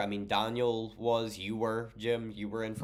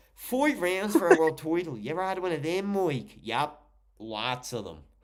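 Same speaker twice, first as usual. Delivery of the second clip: exaggerated Dublin accent, loud, high, lips over teeth; 7 semitones higher, 5 dB louder than usual. Imitating a man from dublin, speaker does his exaggerated dublin accent. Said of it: "he sounds like he's trying to talk without showing any of his teeth".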